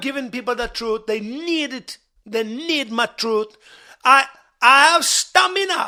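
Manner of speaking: put-on Jamaican accent, played as a character. A character told off for talking in a jamaican accent keeps going, in a jamaican accent. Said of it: "talking with a Jamaican accent".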